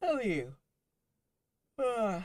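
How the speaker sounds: very high voice stretched by a yawn. Asking the listeners how they are, while yawning. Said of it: "sorry, I'm yawning".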